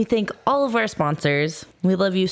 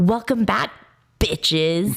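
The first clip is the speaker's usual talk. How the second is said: very emphatic, heavily stressed delivery. Showing the podcast greeting she was going to say: lots of emphasis. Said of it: "So much emphasis".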